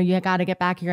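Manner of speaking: ordinary delivery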